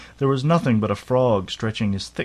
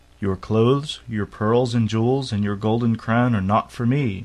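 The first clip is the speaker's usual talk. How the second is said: usual speaking voice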